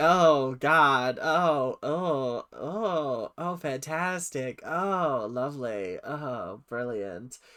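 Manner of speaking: very slow, drawn-out, flat, bored oh's. Imitating a teacher's reply to a tribute routine: imitating unenthused reply. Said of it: "does not seem very enthused".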